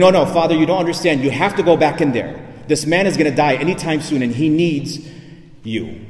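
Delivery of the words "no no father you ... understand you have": plain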